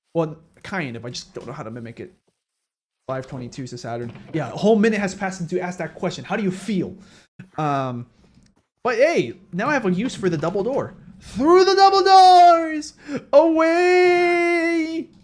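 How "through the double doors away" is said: shrill bellow with the last word stretched. Quoting a cartoon line while building a house: Mermaid Man voice. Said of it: "Mermaid Man says it".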